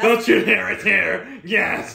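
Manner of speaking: mock exaggerated emphasis. Teasing the other speaker by copying her insistence: imitating someone over-emphasizing. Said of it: "You just emphasize on it".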